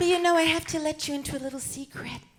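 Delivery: put-on cooing film-star voice. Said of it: "I don't even talk like this".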